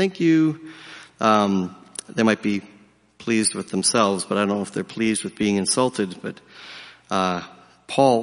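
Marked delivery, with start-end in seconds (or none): 0.0-0.7 very sarcastic, pitched-up voice. Retelling children insulted in the schoolyard: imitating a sarcastic thank you. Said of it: "give a very sarcastic thank you".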